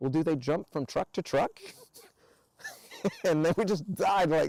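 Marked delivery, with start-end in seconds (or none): 0.0-1.5 mock innocent, guileless, naive, earnest voice. Telling a story, the speaker quotes Deep's question, imitating Deep's innocent voice. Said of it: "in his most innocent, innocent voice".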